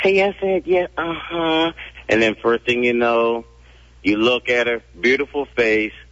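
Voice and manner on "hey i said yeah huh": dainty, cute, little high voice. Describing a woman called Crossbar, imitating Crossbar's cute little voice. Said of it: "she has that cute little voice saying".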